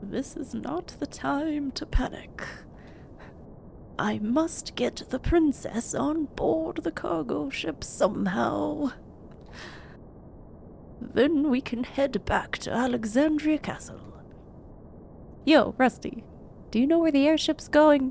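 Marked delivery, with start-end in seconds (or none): 0.0-14.0 strained, forced deep knight voice, slow. Streamer voices a game character's lines, in a forced deeper character voice. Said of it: "[name], / Yeah, it's hard to give him a deeper voice".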